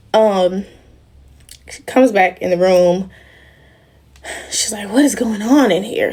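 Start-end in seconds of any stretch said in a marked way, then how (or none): 4.9-6.2 mock fed-up, irritated and frustrated tone. Retelling a woman coming back into the room, mock-annoyed. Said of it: "She's like so annoyed, like so frustrated".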